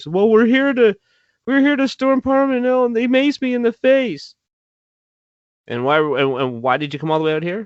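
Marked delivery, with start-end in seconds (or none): 0.1-4.3 put-on play-acted crying and sniffling, pitched way up. Retelling what a woman told a passerby, imitating a woman crying and sniffling. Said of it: "she's like crying and sniffling".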